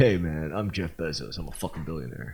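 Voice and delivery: put-on laid-back California surfer voice. Joking about a billionaire's changed look, doing Jeff Bezos as California surfer bro. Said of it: "California surfer, bro".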